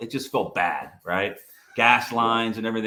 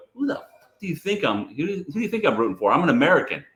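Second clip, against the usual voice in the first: put-on foreign-accented English, higher pitch; 5 semitones higher than usual. Retelling father's answer about which team he roots for: imitating father's accent. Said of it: "he's saying it with an accent".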